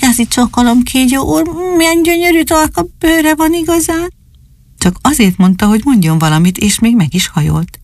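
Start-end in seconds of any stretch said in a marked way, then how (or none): 0.0-4.1 small, thin, very high, courteous voice. Narrator voicing Dani greeting the snake, in a thin but very polite voice. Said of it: "Kicsit vékony hangon, de nagyon udvariasan".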